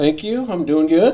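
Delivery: very high, very loud, excited and enthusiastic. Answering the host's greeting at the start, excited voice. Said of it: "I love the excitement in your voice".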